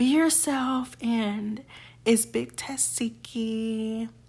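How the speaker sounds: slow, flat, bored, droning put-on monotone. Retelling a performer's boring outro: imitating a monotone outro. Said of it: "She's so monotone".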